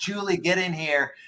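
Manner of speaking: play-acted high, called-out voice. Retelling calling a family member into the room: imitating own past yell. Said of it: "I'm yelling for Anders".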